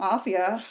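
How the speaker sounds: grudging, bitter, spoken through clenched teeth. Demonstrating a bitter apology, bitter apology through clenched teeth. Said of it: "tapi giginya dirapetin. ... Bitter apology itu begitu".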